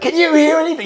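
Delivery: mock yelling at a very high pitch. Recounting yelling to a mate while his ears were ringing: retelling a yell. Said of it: "I'm yelling".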